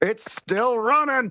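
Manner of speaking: high-pitched hollering call. A game master voices Yenben as the ruse falls apart, hollering. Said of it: "Yenben will start hollering".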